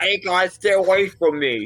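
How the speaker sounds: muffled voice, as if with mouth full. Retelling warning off street thieves, imitating talking with gold in mouth. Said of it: "they hear the gold in my mouth".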